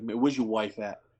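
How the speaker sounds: put-on low voice with a slight New York accent. Driving fast to get him to the show, imitating Tommy's slight New York accent. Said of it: "He's got a little bit of a New York accent".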